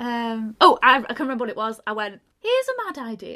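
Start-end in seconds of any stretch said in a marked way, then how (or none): 2.4-3.4 very high, motherly mum voice. Retelling a game round, doing an impression of my mum. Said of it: "I was doing an impression of my mum".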